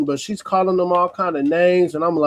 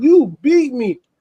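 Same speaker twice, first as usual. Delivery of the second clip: put-on crying voice, higher pitch; 7 semitones higher, 3 dB louder than usual. Retelling what a woman said in a dispute over a phone: imitating someone crying. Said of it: "she was crying like".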